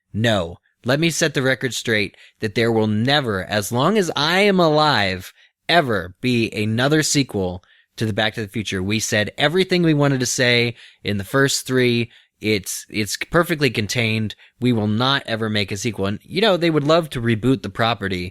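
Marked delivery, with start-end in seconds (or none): none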